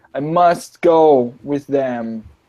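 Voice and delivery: very slow, halting Common with words broken apart. A game master voices Zach answering the group, speaking broken Common. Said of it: "he's saying in like broken common".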